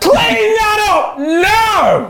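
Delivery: put-on shouting. Acting out telling off strangers in a pub: imitating a shouting parent. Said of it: "you're quite loud".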